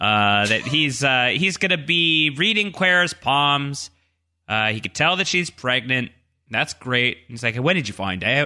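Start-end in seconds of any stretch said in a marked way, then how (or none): 7.6-8.5 put-on Australian accent. Retelling the psychic reading palms, imitating Malkin's Australian accent. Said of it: "my attempt at impersonating his Australian accent".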